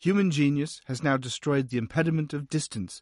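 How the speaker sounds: ordinary talk, nothing marked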